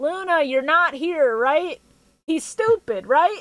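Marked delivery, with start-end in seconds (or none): 0.0-1.8 acted-out character shout. Recapping an episode, acting out a character calling for Luna, retelling a shout. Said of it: "he starts shouting and going".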